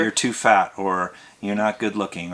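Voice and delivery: normal talking voice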